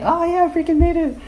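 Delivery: mock shrill, very high, fast excited scream. Recalling shooting and making a basket in a game, retelling an excited scream.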